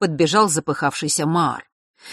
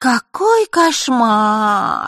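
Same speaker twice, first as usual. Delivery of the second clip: prissy, mincing, precious, affected, pitched-up little voice; 6 semitones higher, 3 dB louder than usual. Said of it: "жеманно произнесла она".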